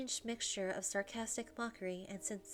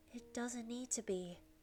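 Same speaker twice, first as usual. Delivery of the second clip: whispered. Narrator voices the last words said as a dream fades; whisper. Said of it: "I managed to say one last whisper".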